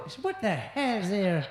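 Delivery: Irish leprechaun accent. Asked if they speak like a leprechaun when tripping, speaker shows it: Irish leprechaun accent. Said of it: "Do you speak like a leprechaun".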